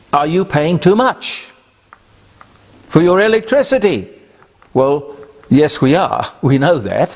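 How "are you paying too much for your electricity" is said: put-on Chinese or Filipino accent, pitched up. Retelling a company phone caller's usual question, imitating Chinese or Filipino accent. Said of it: "Chinese or Filipino accent".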